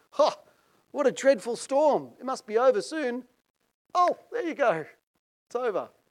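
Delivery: acted groggy voice. Retelling a theory about Jesus waking during the storm, acting out a groggy Jesus. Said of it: "he's a bit groggy".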